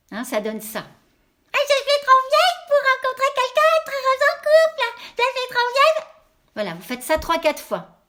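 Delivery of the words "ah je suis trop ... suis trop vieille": very high, loud, duck-like cartoon voice. Showing listeners how to say a belief to themselves, in Donald Duck voice. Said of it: "avec la voix de Donald Duck".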